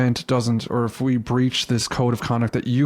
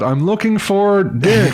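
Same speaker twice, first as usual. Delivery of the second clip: put-on screaming, higher and louder; 7 semitones higher, 5 dB louder than usual. Retelling calling a player over the mic all day: imitating own screaming. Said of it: "I was just screaming out".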